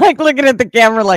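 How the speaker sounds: high, fast speech while laughing.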